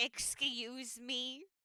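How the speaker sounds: very disgruntled, grumpy character voice. Voicing Gretchen being woken up by someone calling her sweetie, very disgruntled. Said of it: "very disgruntled Gretchen is just like".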